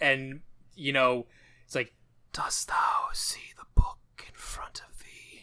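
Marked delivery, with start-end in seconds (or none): 2.3-5.4 put-on devil voice. Describing a scene, speaker quotes the devil's line in a devil voice. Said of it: "Got to voice the devil".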